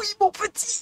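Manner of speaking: put-on failed old-lady voice. Answering a viewer calling out "Mamie Asta": failed granny voice. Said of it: "Je sais pas faire la voix d'une mamie".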